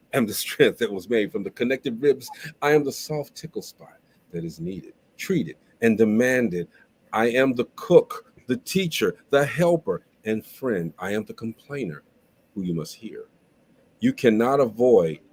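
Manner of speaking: spoken word performance poetry delivery. Reading a poem aloud for the others: spoken word poetry delivery. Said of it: "Uh-oh, spoken word".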